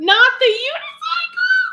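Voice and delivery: high, loud, slow scream.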